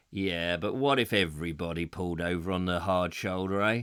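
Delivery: mock haughty, condescending, snooty, very low voice. Retelling a man's reply to them, imitating a snooty, condescending tone. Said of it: "he said in a very snooty, sort of condescending way".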